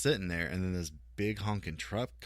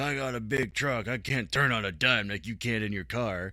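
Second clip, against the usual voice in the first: put-on loud, crotchety old man voice, yelling; 4 semitones higher, 6 dB louder than usual. Retelling a crotchety older driver yelling through his window, retelling an old man yelling. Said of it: "he's yelling at me through his window".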